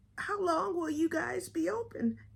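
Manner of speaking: put-on elderly voice, pitched very high. Retelling a phone call, asking the person on the line a question in an old-person impression. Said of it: "my little old impression is working good".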